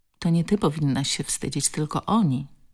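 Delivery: plain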